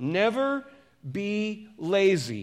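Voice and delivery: slow deliberate reading. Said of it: "I'm gonna read this a little bit slower".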